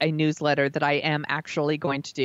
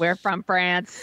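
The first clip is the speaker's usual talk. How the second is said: put-on alien voice; 3 semitones higher than usual. Joking about accents on their podcast, one host does a Coneheads impression. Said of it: "That's my Coneheads impression".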